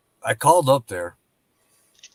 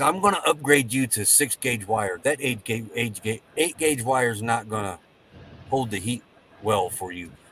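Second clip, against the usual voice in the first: plain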